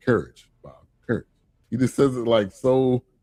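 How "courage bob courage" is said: mock utterly composed, serene, very calm, low delivery. Retelling one of the funniest lines, the speaker imitates its very calm delivery. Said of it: "he said it so calmly".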